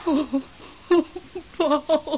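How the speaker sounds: tearful voice. Greeting a ghost who has just answered, crying. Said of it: "Don't cry, [name]".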